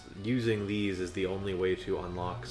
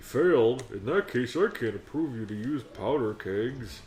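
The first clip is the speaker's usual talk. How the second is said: oversized, big creature character voice; 4 semitones higher, 4 dB louder than usual. A player voices a Goron character while playing the game, big Goron voice. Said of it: "big Goron voice".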